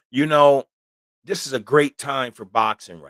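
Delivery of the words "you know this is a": ordinary delivery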